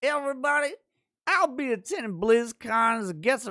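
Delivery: put-on drunk-sounding voice, high. Reading a viewer's chat message aloud, in a Bill Cosby voice. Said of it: "in the Cosby voice".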